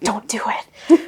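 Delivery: put-on whispered delivery. Retelling what a PA whispered on a film set: imitating a whisper. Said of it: "whispered to me".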